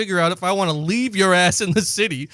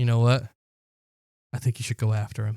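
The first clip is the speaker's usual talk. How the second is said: mock earnest, serious tone, very low voice; 8 semitones lower, 5 dB quieter than usual. Retelling what a passing stranger said to the speaker: imitating a stranger's serious tone. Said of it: "really serious like that?".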